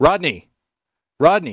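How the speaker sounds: really loud, high, swooping full-on yell. Demonstrating an audio distortion effect by saying a name, shouting really loud. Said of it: "I'm going to say something really loud".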